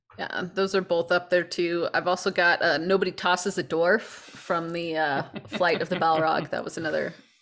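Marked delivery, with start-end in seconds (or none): none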